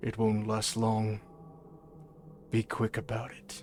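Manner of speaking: deep, breathy, hushed, low-pitched commanding voice. Narrating the scene, voicing the tall man's line in his deep voice. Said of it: "the deep voice of the tall man".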